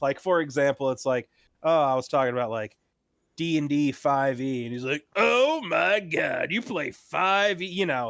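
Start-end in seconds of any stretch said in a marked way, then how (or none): 5.1-7.7 very slow, high, drawn-out, snooty elitist drawl. Imitating a friend who sneers at a game edition: imitating an elitist prick voice. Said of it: "kinda like that elitist prick voice".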